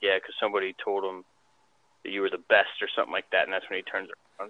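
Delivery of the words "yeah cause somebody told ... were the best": usual speaking voice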